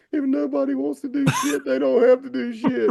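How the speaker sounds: mock very high tearful crying voice. Retelling own words to the officer from earlier, imitating own past crying. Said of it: "as I'm crying".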